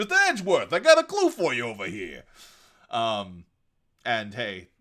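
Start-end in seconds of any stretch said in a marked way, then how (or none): 0.0-2.2 gruff, loud and animated voice. Explaining how some characters suggest gruff voices, a reader demonstrates a Detective Gumshoe voice. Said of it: "He clearly talks something like this".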